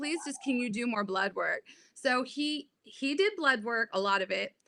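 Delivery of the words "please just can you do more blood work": crying, tearful and desperate tone. Retelling begging a doctor for more tests: retelling a tearful plea. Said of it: "I'm crying, and I'm begging him".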